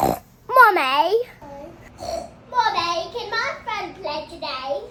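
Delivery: put-on cartoon pig girl voice. Asked to do a Peppa Pig voice: Peppa Pig voice. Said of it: "you do a Peppa Pig's voice?".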